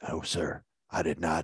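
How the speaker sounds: very low, slow, dead-flat monotone drone. Imitating a fifteen-year-old who talked this way: flat monotone voice. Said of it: "he had this really this monotone voice".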